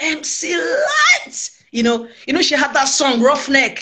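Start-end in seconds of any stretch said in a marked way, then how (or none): 0.0-1.5 very high, high-pitched, squealing shriek. Retelling how they screamed once the phone was put down, retelling a scream. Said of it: "I screamed like".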